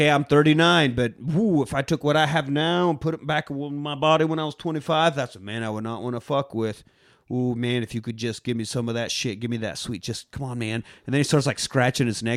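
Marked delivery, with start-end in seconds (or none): 0.0-10.8 sounding strongly, badly craving. Retelling a movie scene, imitating Emil craving the serum. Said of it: "This is where he's like".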